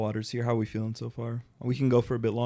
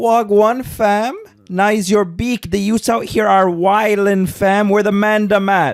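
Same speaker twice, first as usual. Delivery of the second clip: put-on shrill, booming, very loud, high male Toronto accent; 9 semitones higher, 14 dB louder than usual. Showing the others an accent as a bit, in a Toronto man accent. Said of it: "has a Toronto man accent".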